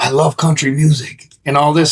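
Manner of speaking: put-on Sudanese accent. Retelling what an Uber driver from Sudan said: imitating a thick Sudanese accent. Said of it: "really, really thick accent".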